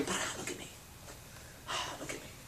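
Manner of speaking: breathy whisper, strutting, showing-off peacock voice. Acting out a male peacock doing its dance: voicing a showing-off male peacock. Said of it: "he's still going".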